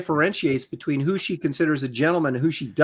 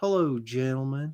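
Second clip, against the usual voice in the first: Southern US accent, quieter; 2 semitones lower, 6 dB quieter than usual. Answering a request to say gentlemen: southern accent. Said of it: "Say gentlemen with a southern accent".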